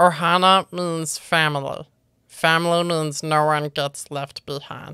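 acted low creature voice. Running through a list of character impressions, the speaker does a Stitch voice. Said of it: "Stitch from Lilo and Stitch".

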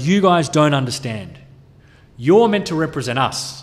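ordinary delivery

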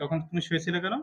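ordinary talk

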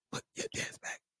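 hushed whisper. Telling listeners that a man is back from rehab: whispering. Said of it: "but I gotta whisper".

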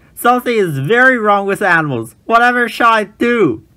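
alarmed, flustered outcry, high-pitched and loud. The keeper comes running, arms in the air, alarmed. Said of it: "jumped up and down with alarm".

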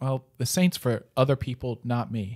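ordinary talk

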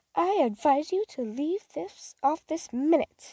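rather sharp, slow, high-pitched scolding tone. Telling herself to stop crying, sharply. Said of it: "rather sharply".

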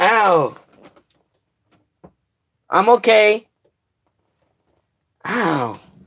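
slow, drawn-out cries of pain. Mid-livestream, the speaker has just kicked their own knee; in pain. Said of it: "I just kicked my freaking knee".

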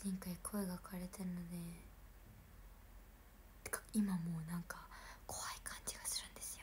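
quick whispered delivery.

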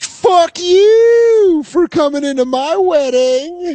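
very high, very slow, furious scream, drawn-out you. Imitating a bride finishing her vows: imitating someone screaming angrily. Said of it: "So she's screaming the vows".

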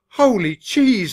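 surprised, high, loud croaked exclamation. The mouse narrator, told by the undertaker their plane might crash, croaks. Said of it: "I croaked".

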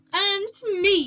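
gleeful quick chime-in. Joining in after another speaker at the table, he chimes in delightedly. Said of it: "Jambu said delightedly".

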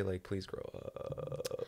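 soft, slow, muttered, pleading whisper.

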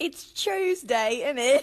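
exaggerated British accent. Joking about how British people talk, the speaker mimics them in an exaggerated British accent. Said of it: "British people be like".

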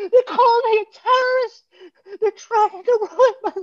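sobbing yell, very high, voice cracking. Retelling a man cry-yelling about not being allowed on the plane: imitating a high cracking cry-yell. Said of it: "You hear his voice cracking and he's high pitched".

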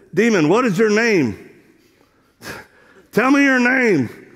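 mock, loud, high-pitched, commanding holler. Retelling what the speaker said to a demon, retelling a yell. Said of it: "I was yelling like the demon can't hear".

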